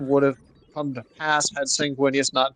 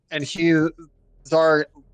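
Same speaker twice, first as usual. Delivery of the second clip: normal talking voice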